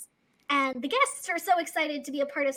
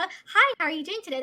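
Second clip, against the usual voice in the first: put-on perky customer-service voice, higher; 4 semitones higher, 4 dB louder than usual. Retelling greeting customers over the intercom, in a perky customer-service voice. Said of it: "had that perky customer service".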